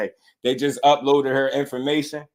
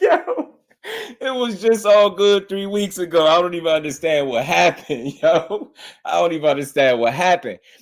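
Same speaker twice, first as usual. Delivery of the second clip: high-pitched speech broken by laughter; 5 semitones higher than usual. Reacting to a clip with disbelief: laughing while talking. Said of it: "the reason I'm laughing so hard".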